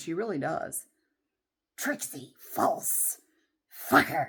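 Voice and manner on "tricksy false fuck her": very slow, grumbling, hissing creature voice, every word dragged. Imitating a grumbling neighbor behind the house: Gollum voice. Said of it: "She sounds like Gollum".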